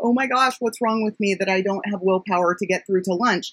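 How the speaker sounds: ordinary talk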